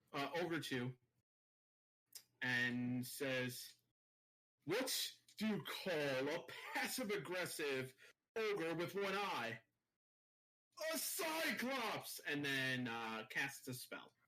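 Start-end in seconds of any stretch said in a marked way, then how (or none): 4.6-12.2 vicious mocking tone, higher pitch. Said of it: "Vicious mockery".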